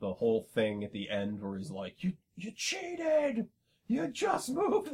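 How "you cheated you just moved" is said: mock scream, much higher and slower. Recalling the ending where a character yells at someone, retelling a scream. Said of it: "He's just screaming at".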